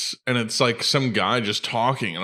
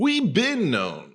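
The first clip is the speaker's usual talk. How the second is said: pitched-up announcer voice; 7 semitones higher than usual. In conversation, speaker slips into the TikTok announcer voice. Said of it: "the TikTok announcer voice".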